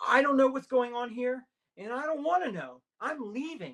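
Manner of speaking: shrill, high, frantic panicked yelling. Retelling what a panicking companion yelled while running away: imitating someone yelling in panic. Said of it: "he starts yelling".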